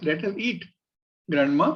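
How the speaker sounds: put-on pause after eat, pause before grandma, rising end.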